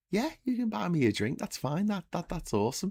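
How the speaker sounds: put-on Liverpool accent. Telling a joke about a man buying drinks for a Scouser, voicing the Scouser. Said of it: "the Scouser's like".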